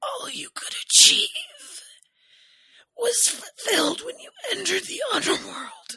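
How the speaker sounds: very high, loud, strained wheezing voice. Quoting how the narrator voices a character, imitating wheezing voice. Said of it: "Like this wheezing".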